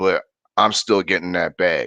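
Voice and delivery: normal talking voice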